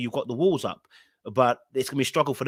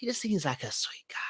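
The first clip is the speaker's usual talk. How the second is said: imitated raspy voice, put-on, higher and quieter; 7 semitones higher, 9 dB quieter than usual. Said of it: "the rasp in the voice".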